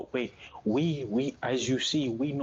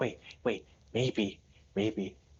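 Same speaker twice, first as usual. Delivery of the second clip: hushed huddle whisper. Voicing Slavo, who pulls the group in close: whispering in character. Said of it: "kinda whispers".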